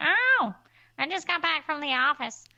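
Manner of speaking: put-on high-pitched woman's voice. Describing a film scene where he fakes a phone message, imitating a woman's voice. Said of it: "a woman's voice".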